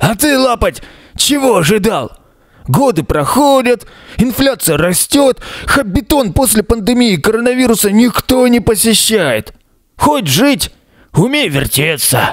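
hoarse, raspy, smoke-worn voice. Narrating a hobbit answering a stunned onlooker, in a hoarse smoker's voice. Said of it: "говорит хриплым прокуренным голосом".

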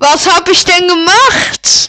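too loud on the mic.

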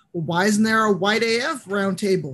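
ordinary delivery

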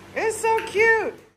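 put-on high cooing baby voice.

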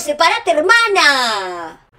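slow, drawn-out, loud yell. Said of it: "Y yo a los gritos".

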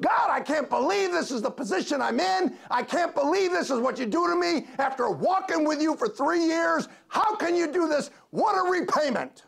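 acted very high, full-throated shrill scream. Retelling how a chained prisoner facing execution cried out; imitating someone screaming. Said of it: "he's screaming at the top of his lungs".

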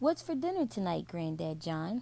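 plain

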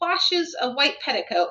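ordinary delivery, nothing marked

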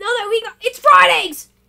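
fast, loud yelling straight into the mic. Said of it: "making the microphone turn red".

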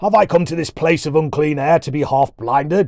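loud, roaring bellow. The dwarf, half-blinded by Colin's lamp, speaks to Colin: bellowing. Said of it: "he bellowed".

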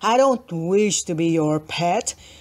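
deep, rumbling dinosaur voice. Reading a story aloud, a character speaks in his rumbling voice. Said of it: "in his rumbling voice".

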